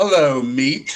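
threatening, intimidating, menacing tone. Asked to say a short line in a really intimidating voice. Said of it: "say in a really intimidating voice".

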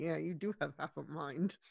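very low, quiet mutter under the breath. Sarah walks off after the deputy's threat, mumbling under breath. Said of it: "is mumbling".

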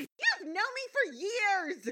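very high, soft, offended, indignant tone. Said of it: "I love indignant Pinkie Pie".

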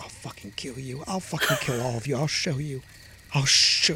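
soft muttering under the breath. Voicing a character hobbling off threatening everyone, muttering under his breath. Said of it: "muttering under his breath".

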